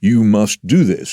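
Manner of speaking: loud, slow, barked delivery. Mocking people who shout at others to get vaccinated: Dalek voice. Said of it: "in a Dalek voice".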